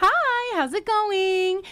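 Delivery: bright, cheerful, high, slow and very drawn out. Retelling greeting people who knocked at the car window, in a put-on cheerful voice. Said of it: "I've got like my most cheerful voice on".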